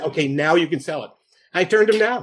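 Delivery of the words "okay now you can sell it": ordinary talk, nothing marked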